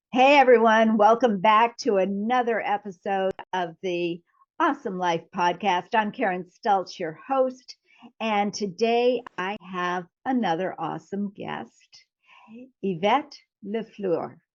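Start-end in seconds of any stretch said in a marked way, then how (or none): 12.8-14.3 put-on French-accented pronunciation. Podcast host introducing her guest by name, with a French accent. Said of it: "I'm going to put that French accent on it".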